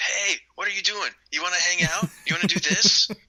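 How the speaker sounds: keen, insistent high voice.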